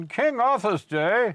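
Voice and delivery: very high, loud, drawn-out bad English accent. Recalling what he used to say walking down the street, in a bad English accent. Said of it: "Why are you doing that bad English accent?".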